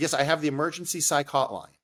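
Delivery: normal talking voice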